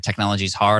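ordinary delivery

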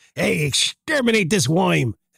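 rough 1940s New York gangster voice. Joking about what a robot could say, trying a 1940s gangster voice. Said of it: "now I sound like a 40s gangster".

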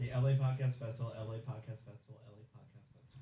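very quiet, rapid-fire rattled-off repetition. Answering a request to repeat a name three times: said three times fast. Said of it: "You gotta say it three times fast".

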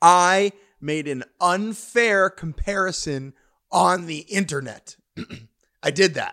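fake tearful, choked-up voice, slow and drawn-out. Apologizing for an unfair comparison on the internet, mock choking up. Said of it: "I'm choking up about it now".

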